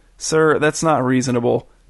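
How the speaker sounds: plain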